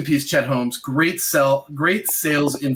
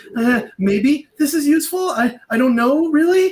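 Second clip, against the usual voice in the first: unsure pleading tone, pitch rising on useful and really; 12 semitones higher, 4 dB louder than usual. Speaker demonstrating to listeners an unconfident way of asking, doubtful rising tone. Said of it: "There's like doubt in that tone, that upward".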